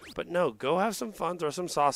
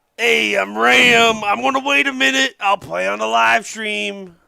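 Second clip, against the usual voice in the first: very loud, high, slow, rough, bad put-on impression; 7 semitones higher, 13 dB louder than usual. Mocking a player in his voice: bad Ram impression. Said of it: "Such a bad impression".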